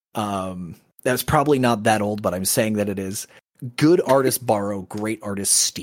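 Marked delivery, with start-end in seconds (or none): none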